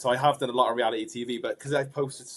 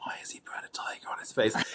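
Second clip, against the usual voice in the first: put-on quieter whispered narrator voice; 7 dB quieter than usual. Retelling how the show's narrator whispered over the footage: imitating Greg James whispering.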